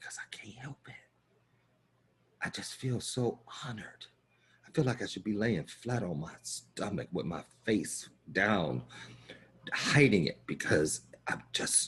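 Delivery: put-on whisper. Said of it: "all of a sudden I'll drop to a whisper".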